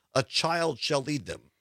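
normal talking voice

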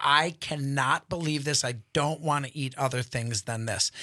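normal talking voice

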